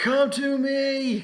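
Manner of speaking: furious, raging battle cry, very loud and high. Voicing a barbarian charging through a broken door: raging battle cry. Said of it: "immediately goes into, like, a furious rage".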